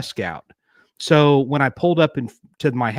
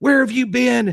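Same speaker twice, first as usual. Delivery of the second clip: very high, shrieking, screaming yell; 11 semitones higher than usual. Retelling how a mother burst into the bedroom: imitating mother yelling. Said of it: "she's yelling and screaming".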